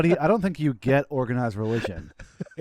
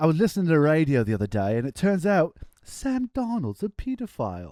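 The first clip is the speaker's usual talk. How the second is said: exaggerated, over-the-top, swooping English accent; 3 semitones higher than usual. Asked to try a UK accent for a joke, exaggerated British accent. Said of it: "they in the U K they don't say pedophile ... Can you do it?".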